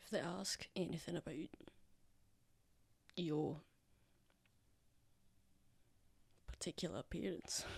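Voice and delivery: very quiet, hushed whisper. A character keeps talking to Yezi while walking down the path, speaking quietly. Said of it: "quietly, and he's gonna say".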